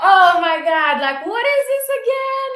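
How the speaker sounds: loud, high, loose fake-drunk talk. Retelling a wine tasting where mom acted drunk: imitating mom acting drunk. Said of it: "acted like she was, like, so drunk".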